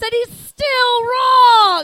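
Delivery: loud, slow, high mock-outraged yell.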